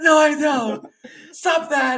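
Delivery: very high, very loud, drawn-out sobbing wail. Retelling how he reacted to the spam comments, imitating someone screaming and crying. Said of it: "he's like crying and he's like screaming".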